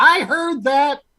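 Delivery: shrill, piercing, very high-pitched cry. Narrator voicing someone calling from the other room, piercing shrill voice. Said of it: "a piercing, shrill voice from the other room go".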